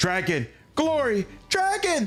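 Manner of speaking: very high, swooping, excited creature shouting. Narrator voices the kobolds calling out together: excited kobold voices rising. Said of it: "The voices of the kobolds rise in excitement".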